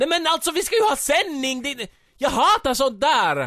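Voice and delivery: shrieking, shrill, very high-pitched scream. A narrator voices the monkey's outburst in the story: screamed. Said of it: "Skrek apan och viftade med armarna".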